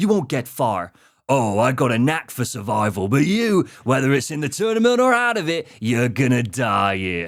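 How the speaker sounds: put-on Cockney accent, laid on heavily. Narrating a story, voicing Kano's lines to Sonya; Kano in Cockney accent. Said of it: "I can't do Australian, so you're getting Cockney".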